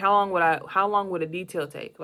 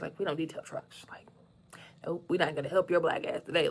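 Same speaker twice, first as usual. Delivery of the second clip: put-on smug smirking tone, quieter; 6 dB quieter than usual. Retelling how a man refused to detail his truck, imitating a smirking refusal. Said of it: "he got this like smirk on his face".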